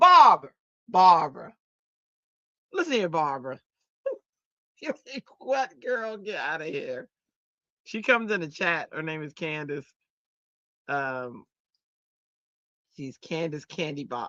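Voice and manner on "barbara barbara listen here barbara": put-on loud country accent from North Carolina. Retelling how a friend from North Carolina calls the speaker Barbara, Candace's country accent. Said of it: "she got that country accent".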